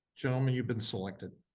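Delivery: mock deadpan, flat, with no feeling at all. Retelling how he announced the selection: imitating an emotionless announcement. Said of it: "with no emotion".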